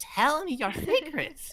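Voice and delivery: eerie, creepy, crazy woman's voice.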